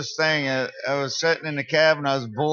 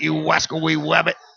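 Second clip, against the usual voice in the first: higher-pitched, lisping cartoon voice; 2 semitones higher, 4 dB louder than usual. Talking about Elmer Fudd, one speaker breaks into Elmer Fudd voice. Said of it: "I like when you do voices".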